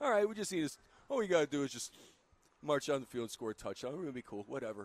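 casual, unbothered, easygoing offhand voice. Imitating a quarterback leading the offense: Eli Manning impersonation. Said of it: "Was that your Eli Manning impersonation?".

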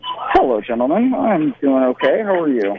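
glum, dour, sour tone. Guest greets the hosts as he joins the show, dour and sour. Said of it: "You sound kind of dour and sour".

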